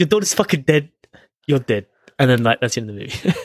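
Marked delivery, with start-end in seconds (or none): 0.0-1.9 put-on New York accent and way of talking. Acting out a movie's ending, switching into a put-on new york accent. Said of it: "I'm like a New Yorker".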